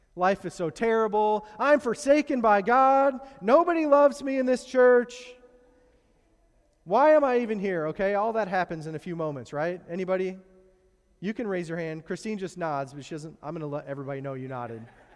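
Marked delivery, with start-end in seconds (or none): 0.2-7.9 very loud, slow, drawn-out whining and moping. Acting out one's own complaining after one bad thing: whiny Eeyore-like complaining. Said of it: "I'm like Eeyore".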